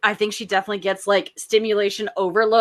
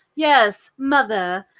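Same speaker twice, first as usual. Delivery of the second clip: put-on mid-Atlantic old-Hollywood accent. Describing a put-on accent of old Hollywood, demonstrate it: put-on mid-Atlantic accent. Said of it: "mid Atlantic like put on accent that was of old Hollywood".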